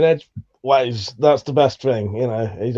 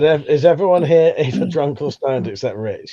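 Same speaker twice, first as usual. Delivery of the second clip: plain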